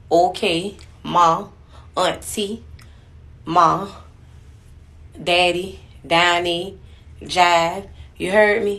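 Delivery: Savannah accent and slang, word by word. Demonstrating Savannah slang for viewers who asked about the accent, Savannah accent. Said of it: "like Savannah accent".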